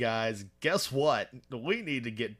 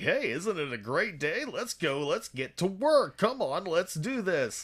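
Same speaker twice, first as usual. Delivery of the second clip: syrupy, cloying game-show-host voice, pitched up; 7 semitones higher than usual. Imitating how someone talks, in a cloying game show host voice. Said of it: "almost game show host kind of voice".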